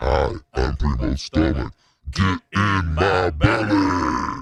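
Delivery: deep, loud put-on character voice. Handing over to his stomach to speak: voicing his own stomach. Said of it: "let me let you talk to his stomach".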